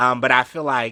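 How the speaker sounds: abrupt loud yell.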